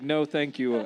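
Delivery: firm, no-nonsense, very stern tone. Retelling a film scene, quoting the doctor's refusal: imitating a stern refusal. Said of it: "very sternly".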